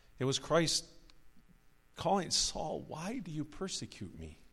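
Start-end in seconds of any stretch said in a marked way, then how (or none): 2.3-4.3 soft, sorrowful, grieving voice with swooping pitch. Preacher acts out Christ calling to Saul: acting out Christ's grieved voice. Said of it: "It was a grieved voice".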